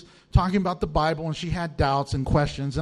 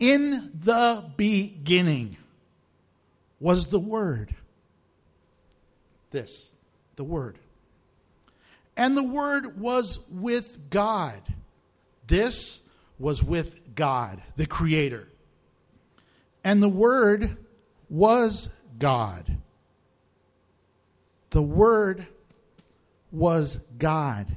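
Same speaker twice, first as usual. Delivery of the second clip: slowed-down, unhurried reading aloud. Speaker reads a scripture passage aloud for listeners to think about, reading slowly. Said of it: "I want to read it slow".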